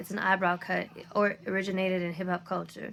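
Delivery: plain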